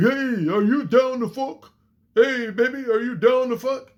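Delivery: brash dumb-jock voice. Mocking how a man talked to a woman, in a loudmouth dumb jock voice. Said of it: "a loudmouth dumb jock".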